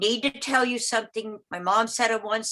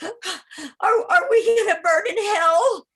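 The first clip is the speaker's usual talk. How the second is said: acted very high, very slow, drawn-out tearful sobbing; 11 semitones higher, 6 dB louder than usual. Retelling a mother's late phone call: imitating sobbing like a little girl. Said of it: "sobbing like a little girl".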